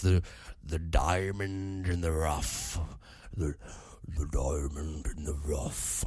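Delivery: put-on cartoon lion voice, very deep and slow. Trying a best-effort impression of a film character, in the Aladdin lion voice. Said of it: "that lion voice from Aladdin, but that's my best impression".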